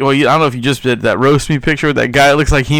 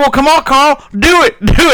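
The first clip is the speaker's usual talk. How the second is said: very high-pitched voice; 12 semitones higher, 3 dB louder than usual. Retelling the movie scene, quoting the stepdad daring carl. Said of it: "he's like".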